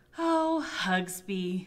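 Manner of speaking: with a sigh. After failing to teach him anything, she says it with a sigh. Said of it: "sighed Shelley".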